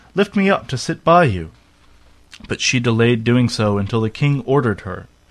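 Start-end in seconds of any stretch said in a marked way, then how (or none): 0.1-1.5 frog voice crying out, high and calling. A frog hops after her to her chair, stops, and calls: crying out. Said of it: "Then he stopped and cried".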